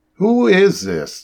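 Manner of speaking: very high, insistent, demanding tone. On a confusing speakerphone call, a doctor speaks up, demanding. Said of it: "[name] demanded".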